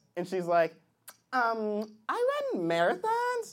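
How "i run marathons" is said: swooping, sing-song caricature voice.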